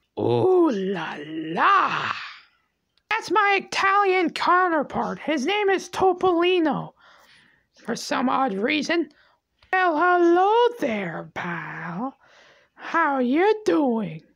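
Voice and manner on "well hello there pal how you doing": flirty, sweet-talking tone, drawn-out pal. Mickey's Italian counterpart greets Mickey's wife; flirtatious Topolino voice. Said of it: "Are you trying to flirt with me?".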